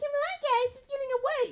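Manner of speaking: mocking voice pitched very high. Narrator reads Buttercup urging on her sisters, Buttercup in mocking high voice. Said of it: "Buttercup in a mocking high voice".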